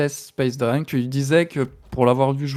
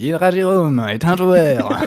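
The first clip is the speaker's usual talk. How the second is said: loud, put-on little character voice; 3 semitones higher, 6 dB louder than usual. Describing Hydra Jérôme as a player, in a Pokédex voice. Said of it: "la petite voix du Pokédex".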